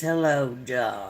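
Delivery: very low, deep, flirtatious woman's voice. Speaker recalls a woman on the Griffith show flirting with Barney, imitating a very deep woman's voice. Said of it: "that woman with a very deep voice says".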